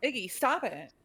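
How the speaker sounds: echoing put-on monster voice. Voicing a monster of mouths that repeats words: Iggy's voice. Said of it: "back in Iggy's voice".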